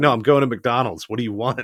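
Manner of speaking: put-on indifferent, uncaring tone. Retelling a parent interrupting a student's online speech: imitating an indifferent parent. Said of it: "could not have cared less".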